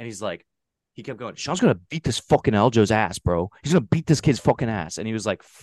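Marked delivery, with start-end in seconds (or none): 1.3-5.0 put-on play-acted kid freaking out, intense, fired-up, hyped rant. Retelling what a kid in line kept saying: imitating an intense kid freaking out. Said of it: "freaking out".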